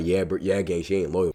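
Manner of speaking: mock low, soft, sneaky mumbling voice.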